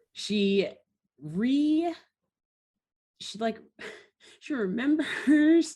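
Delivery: giggling through words, high and drawn out. Recapping a cartoon plot, breaking down: laughing while talking. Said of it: "I'm, like, laughing".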